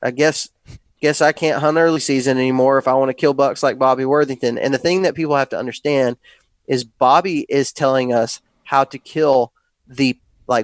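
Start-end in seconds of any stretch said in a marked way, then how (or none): none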